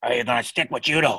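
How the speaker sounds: gruff, stern, serious growling voice. Retelling asking to try judo, quoting Bill's reply; imitating Bill's stern growl. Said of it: "he growls when he talks".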